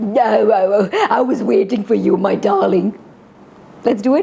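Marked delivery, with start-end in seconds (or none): 0.0-3.0 put-on husky wolf voice put on as sweet old woman. Acting the wolf greeting red as her grandmother, husky wolf voice. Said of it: "still have that husky wolf voice".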